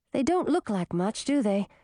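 ordinary delivery

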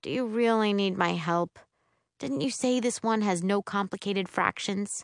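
plain

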